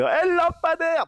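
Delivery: very high, loud, put-on southern French twang. Retelling a drunk friend's shout in a video: imitating a southern french accent. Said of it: "il a un accent, euh, du sud".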